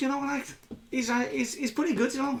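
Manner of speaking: high-pitched turtle creature voice. A player shows how the turtle druid he plays talks: Obo the turtle druid voice. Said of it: "he talks like this".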